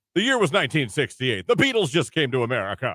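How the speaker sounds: marching band announcer-style commentator voice. Describing the band coaches' scripted show, in a marching band announcer voice. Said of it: "you do the best commentator voice".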